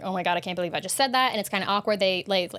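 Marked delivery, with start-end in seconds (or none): 0.0-1.3 put-on panicked voice. Retelling a character's text mishap: imitating someone panicking. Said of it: "and then she's panicking".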